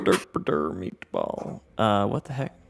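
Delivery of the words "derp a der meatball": put-on Swedish-sounding gibberish. Repeating a bit for a co-player: Swedish Chef voice. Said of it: "He did Swedish Chef from the Muppets".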